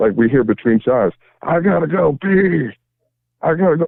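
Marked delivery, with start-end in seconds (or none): 1.4-3.9 high, stretched-out, drawn-out holler. Retelling how drunk Loop Dog yelled between songs: imitating someone yelling. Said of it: "he's yelling".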